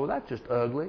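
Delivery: very hushed, low, soft Southern drawl. Northerner recalls a Southerner he heard in Texas, Southern drawl. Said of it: "someone with that Southern drawl say".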